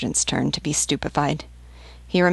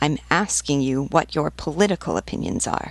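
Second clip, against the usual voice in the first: ordinary delivery, nothing marked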